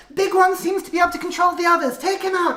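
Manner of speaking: very high, loud shouted delivery. Voicing a character with a bow who shouts to the others: shouting a battle order. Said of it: "shouts out".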